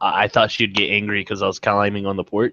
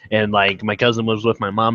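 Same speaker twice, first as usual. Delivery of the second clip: plain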